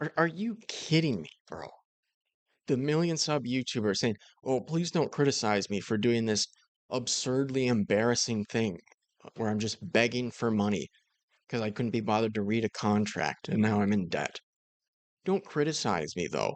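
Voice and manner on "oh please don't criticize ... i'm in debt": ordinary talk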